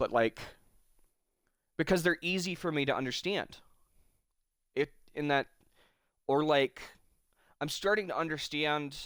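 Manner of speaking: voice catching and breaking mid-phrase, halting. Speaking about own hobbies and family, getting a little choked up. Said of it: "And I'm getting a little choked up".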